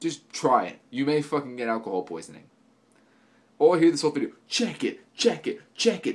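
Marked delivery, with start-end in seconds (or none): 4.5-6.2 mocking put-on wannabe gangsta voice, pitched up. Mocking a video maker's catchphrase: mocking wannabe gangsta voice. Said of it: "like a fucking wannabe gangsta".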